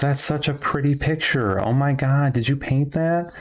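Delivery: woman's voice, mildly condescending, faintly patronizing. Retelling what a woman said on seeing the painting: imitating a condescending woman. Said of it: "almost condescendingly says".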